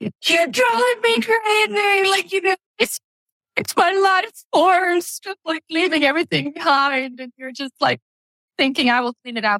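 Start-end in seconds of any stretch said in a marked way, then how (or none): 0.0-2.1 reenacted yell, much higher and slower. Describing a meltdown with their kids, retelling own yelling at kids. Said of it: "I'm like yelling at our kids going like".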